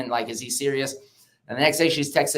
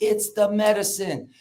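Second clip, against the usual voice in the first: sudden, high-pitched, shouted outburst; 7 semitones higher than usual. Retelling what was yelled in the cold plunge: retelling own yelling. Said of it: "and I would start yelling".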